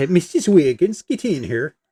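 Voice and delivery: put-on Upper Michigan accent. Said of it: "a kind of a Yooperish accent".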